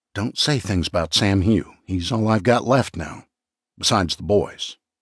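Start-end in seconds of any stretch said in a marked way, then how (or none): none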